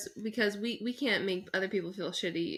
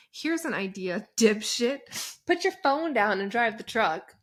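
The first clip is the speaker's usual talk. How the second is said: loud, mocking ranting. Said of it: "He goes".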